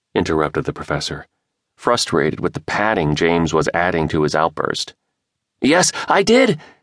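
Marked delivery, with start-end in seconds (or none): 5.6-6.5 eager, excited voice, very high pitch. James answers the professor who interrupted him, excited. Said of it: "James replied excitedly".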